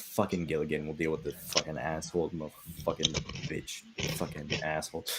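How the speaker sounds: very quiet, low, seething under-breath grumbling mutter. Voicing an angry character leading the party: seething under his breath. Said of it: "he's seething under his breath".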